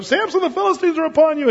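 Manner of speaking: high-pitched, fast, alarmed call.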